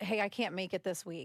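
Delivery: ordinary delivery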